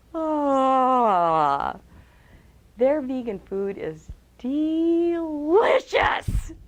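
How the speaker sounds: slow, every word lingered over, long drawn-out ah. A speaker demonstrating using the voice differently to listeners: stretched-out words. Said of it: "stretch out your words".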